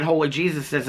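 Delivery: plain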